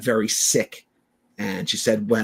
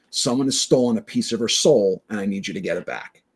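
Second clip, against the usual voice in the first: ordinary talk, nothing marked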